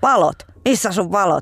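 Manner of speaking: acted angry man voice, mock anger. Speaker retells a middle-aged man stopping her bike: imitating an angry man. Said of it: "mies mun fillari eteen hyökkäsi".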